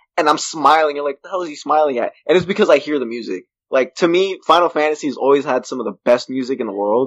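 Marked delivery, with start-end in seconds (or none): none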